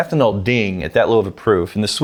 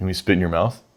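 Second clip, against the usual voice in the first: mock deadpan, quiet, level and dead straight; 4 semitones lower, 5 dB quieter than usual. Retelling the editor's reply to a small complaint in the studio, in Dan's deadpan. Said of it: "Just deadpan".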